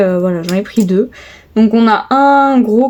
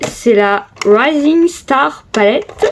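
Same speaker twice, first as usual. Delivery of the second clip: higher-pitched English accent; 3 semitones higher than usual. Showing her makeup, the speaker names a palette; english accent. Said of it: "Excusez mon accent anglais".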